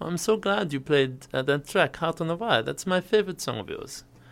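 really bad, fake German accent. Quoting a man who came up to the speaker: really bad German accent. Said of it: "I'm going to do a really bad German accent".

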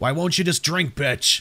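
snarling creature voice. A narrator reads the line of the thing in the road, snarling. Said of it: "the thing snarled".

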